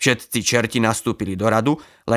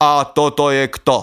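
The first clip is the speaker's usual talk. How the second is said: booming, thunderous call like rolling thunder; 4 semitones higher, 4 dB louder than usual. In a read-aloud tale, Lucifer questions a captured devil: Lucifer's thunderous voice. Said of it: "Zvolal Lucifer hromovým hlasom".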